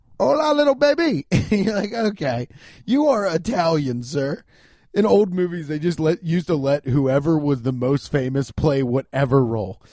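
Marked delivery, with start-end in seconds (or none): 0.2-1.3 bad put-on Cuban accent, pitched up high. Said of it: "Al Pacino cannot do a Cuban accent".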